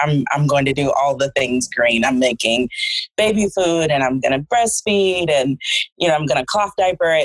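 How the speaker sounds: plain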